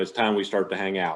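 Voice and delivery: ordinary talk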